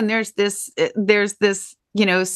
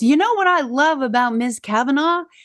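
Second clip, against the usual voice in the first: mock yelling, higher pitch; 5 semitones higher than usual. Speaker retells a teacher suddenly yelling to the class, retelling her yell. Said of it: "she yells".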